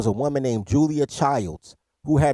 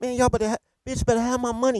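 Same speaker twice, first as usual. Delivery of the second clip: tough gangster voice, pitched up high; 9 semitones higher, 3 dB quieter than usual. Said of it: "she was talking like a real, a real gangster".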